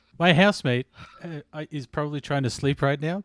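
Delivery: normal talking voice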